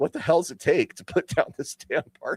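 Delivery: frustrated monster voice. A game master recalls the party surviving the dragon again: acting out a frustrated dragon. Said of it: "for the green dragon to be like".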